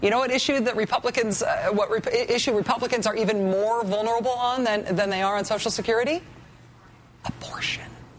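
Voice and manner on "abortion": the word "abortion" dropped to a whisper. Naming the issue Republicans are vulnerable on: whispered word abortion. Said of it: "I have to whisper the word".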